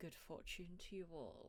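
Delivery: soft half-whisper, faintly and quietly amused. The hider calls after Fez and the others as they leave, amused half-whisper. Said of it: "whisper in a kind of amused tone".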